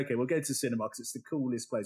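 ordinary talk

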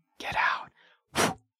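hushed, ghostly whisper. Voicing an unseen whisperer telling a character to get out: whispering. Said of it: "you just hear someone whisper the words into your ear".

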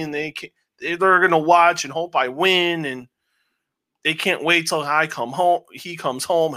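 plain

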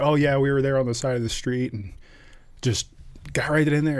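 put-on light, jokey, offhand tone. Retelling what a Navy PA said, mimicking a joking tone. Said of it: "he jokingly like".

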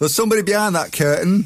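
high female shouting voice. Retelling how the woman spotted someone behind the curtain: imitating the woman shouting. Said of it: "so the bird shouts".

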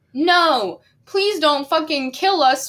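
pleading, begging tone. In the narrator's dream, two men beg a gunman not to kill them, pleading. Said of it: "they pleaded".

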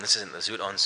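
ordinary talk

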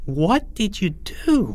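aghast, horrified, high-pitched. Reading Porge's reply after Greg boasts he got him good: horrified. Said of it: "Said Porge in horror".

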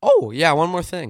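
loud voice, cracking mid-phrase. Speaker adding one more thing after recapping the week, voice cracking. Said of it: "My voice just cracked".

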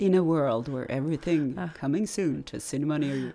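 deep, epic movie-trailer narrator voice. Saying someone could voice film trailers, then demonstrating a movie trailer voice. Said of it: "skulle han kunna göra sådana här filmtrailers".

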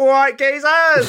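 put-on shrill, loud, high-pitched Cockney accent shout. Retelling how a character says goodbye when he leaves: Cockney accent. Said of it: "a Cockney goodbye".

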